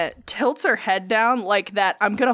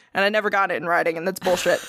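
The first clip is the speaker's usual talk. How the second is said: usual speaking voice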